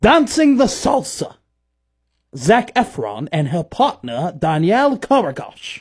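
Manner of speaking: announcer-style delivery. Imitating the show's host announcing a couple, in Dancing with the Stars announcer voice. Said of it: "you can do that voice really well".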